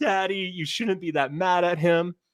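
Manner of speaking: put-on high, tearful, pleading little girl's crying voice. Retelling a family story to a listener, quoting his daughter, imitating daughter crying. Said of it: "My daughter's crying".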